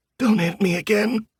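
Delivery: rasping, very high-pitched voice. Narrator reads the Yeti's plea after being punched, in a raspy voice. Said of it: "he says in a raspy voice".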